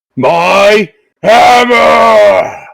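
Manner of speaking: loud booming bellowing shout, drawn-out "my". A figure runs up behind Bakul on a quiet evening street, in a loud booming shout. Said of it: "a loud, booming voice shouts out".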